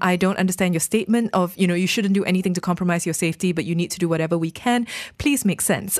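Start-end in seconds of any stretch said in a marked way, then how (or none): none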